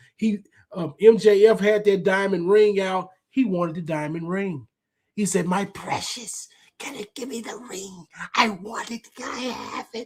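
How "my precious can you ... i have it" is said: soft, breathy, whispered creature voice. Retelling what a man said when he wanted the diamond ring, in a Gollum voice. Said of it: "He went full Gollum".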